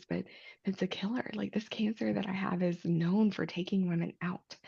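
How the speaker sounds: quiet, hushed, guarded and confiding aside. Not wanting her son at home to overhear, speaking quietly. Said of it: "I'm going to say this quietly".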